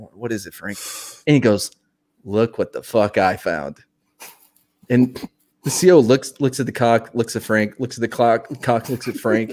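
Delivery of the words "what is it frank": put-on sleepy voice, much lower, quieter. Retelling how a woken captain answered his door, imitating a sleepy voice. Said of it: "he's like rubbing sleep out of his eyes".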